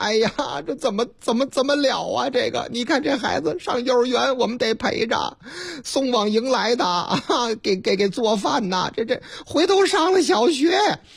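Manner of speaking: put-on tearful, crying tone. Retelling one auntie complaining to another outside a tutoring center, imitating a tearful voice. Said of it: "带着哭腔".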